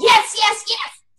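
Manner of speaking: very loud, high, repeated shouting. Leading everybody in a repeat-after-me drill, saying it very loud. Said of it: "As loud as you can".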